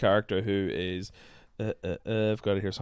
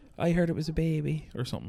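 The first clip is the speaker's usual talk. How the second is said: put-on Cork accent, a touch higher in pitch; 7 semitones higher than usual. Recapping a scene for the episode, the speaker quotes Aoife in a Cork accent. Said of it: "doing a Cork accent".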